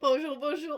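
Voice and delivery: choked up, throat tightening. Greeting viewers at the start of a video, choking. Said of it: "je m'étrangle, pardon".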